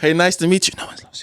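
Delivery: whispered under the breath.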